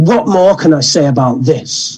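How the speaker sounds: slow, scornful, dismissive, can't-be-bothered tone. Retelling a test candidate pushing the pictures away: imitating a dismissive candidate. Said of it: "she just said it in this kind of way that was like".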